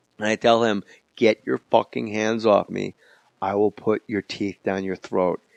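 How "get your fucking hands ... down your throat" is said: calm, even mock voice, pitched lower. Retelling own reply while being held by the lapels: imitating own calm threat. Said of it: "I get real calm".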